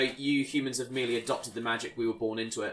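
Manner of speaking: usual speaking voice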